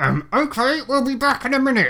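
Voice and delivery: put-on speech through gritted teeth. Retelling a man's reply after kicking someone under the table, mock gritted teeth. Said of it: "through gritted teeth".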